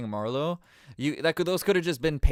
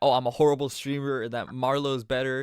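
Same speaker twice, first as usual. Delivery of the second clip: ordinary talk, nothing marked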